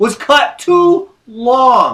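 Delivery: slow, disbelieving tone.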